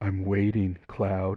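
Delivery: put-on creepy voice. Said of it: "again in that creepy voice".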